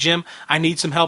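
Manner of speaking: usual speaking voice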